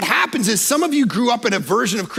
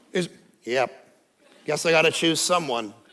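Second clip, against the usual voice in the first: dull, low, flat deadpan monotone; 6 semitones lower, 5 dB quieter than usual. Telling a listener how they did not answer a proposal: mock monotone answer. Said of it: "you weren't answering yes in monotone".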